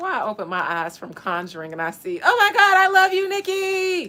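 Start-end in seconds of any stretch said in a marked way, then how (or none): 2.2-4.1 mock very loud, very high, shrieking fan scream. Reading a line as a fan at a concert, screaming excited fan voice. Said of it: "I read that in a fan at a concert voice".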